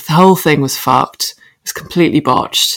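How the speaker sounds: usual speaking voice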